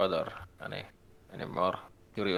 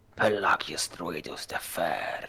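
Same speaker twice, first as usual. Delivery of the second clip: muttered whisper under the breath. Voicing a character on the way out of the room: whispering under his breath. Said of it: "just whispers under his breath".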